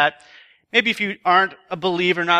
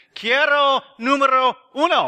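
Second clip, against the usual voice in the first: fake Spanish accent, much higher; 8 semitones higher than usual. Retelling ordering from the window, the speaker uses a less bad Spanish accent. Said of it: "probably less bad accent".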